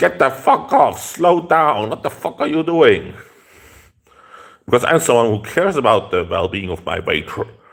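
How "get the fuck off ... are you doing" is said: loud, put-on shouting. Speaker retelling yelling at a bicycle rider rushing through the alley, retelling a yell. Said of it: "I started to yell at them".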